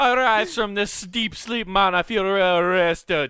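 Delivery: slow put-on Jamaican accent, words stretched. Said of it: "You just come out of the coma".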